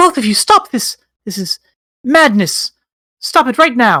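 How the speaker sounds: high, squeaky, tiny mouse voice. Voicing Nell rushing out to address both of you, in a tiny mouse voice. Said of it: "the tiny mouse Nell".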